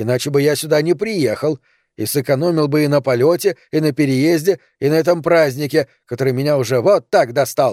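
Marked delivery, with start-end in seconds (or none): none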